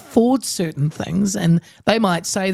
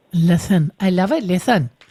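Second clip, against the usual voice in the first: put-on Welsh up-and-down lilt, slower. Greeting a guest named lithan, copying your husband's welsh: imitating husband's welsh lilt. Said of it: "I try and do that little hello then up and down like this".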